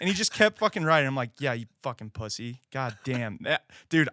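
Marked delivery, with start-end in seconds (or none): 1.4-4.1 mock furious, angry, jeering taunting tone. Speaker recounts insulting a stranger who kept riding away after the argument; retelling an angry taunt. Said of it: "I was so pissed when he did that".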